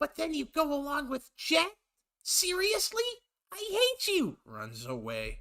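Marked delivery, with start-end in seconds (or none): 0.0-4.4 very high-pitched cartoon fox voice. Reading a Sonic and Tails role-play aloud, Tails' lines in an attempted Tails voice. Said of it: "I don't have a high enough voice to do a Tails voice".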